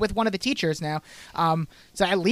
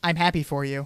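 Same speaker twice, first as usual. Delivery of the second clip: mock-flat monotone delivery; 5 semitones lower than usual. Recapping a scene, speaker acts out a character's reply, mimicking Blair's monotone reply. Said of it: "She gives the most monotone".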